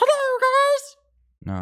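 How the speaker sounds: very high, loud, swooping, sing-song cartoon voice. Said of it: "the Mickey Mouse voice".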